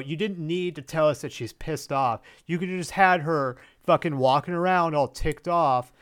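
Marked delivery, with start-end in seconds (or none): none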